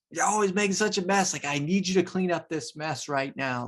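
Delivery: exasperated telling-off. Describing what children hear, acting out a parent, imitating an angry parent. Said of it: "And if you're angry and you're like".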